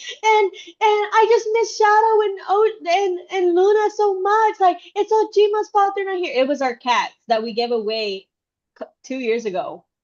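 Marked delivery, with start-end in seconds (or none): 0.0-6.3 very high, loud, crying, wailing sob. Retelling what she said yesterday: imitating someone screaming and crying. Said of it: "when she was screaming and crying".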